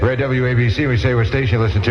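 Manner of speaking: ordinary delivery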